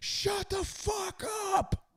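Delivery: put-on, very high, screaming kid's outburst. Recounting a kid turning to his dad in the bleachers, imitating the kid screaming. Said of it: "and just screams".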